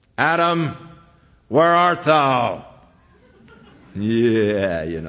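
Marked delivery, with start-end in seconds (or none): 0.2-2.7 stern, commanding, authoritative tone. Showing how the line is often imagined, in an arresting officer's tone. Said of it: "the tone of voice of an arresting officer".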